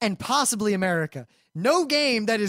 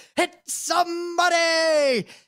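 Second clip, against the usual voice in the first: loud, high holler, "somebody" drawn out; 7 semitones higher than usual. Explaining how someone in the corner has to shout it, showing how: yelling. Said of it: "You have to yell it like that".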